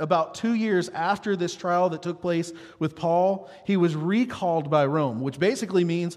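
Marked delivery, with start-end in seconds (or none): none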